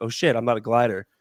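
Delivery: mock frightened tone. Retelling how a dude reacts when pulled over by cops: imitating someone scared. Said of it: "he gets scared and goes".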